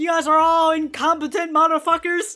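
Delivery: loud yelling. Retelling how Raimon yells at everybody: imitating someone yelling. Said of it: "Raimon's out here yelling at everybody".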